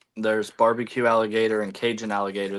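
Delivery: normal talking voice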